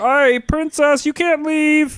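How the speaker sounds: very high, loud, drawn-out squeaky voice. Retelling game guards telling the princess she can't leave: Kermit the Frog voice. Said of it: "They sound so much like Kermit the Frog".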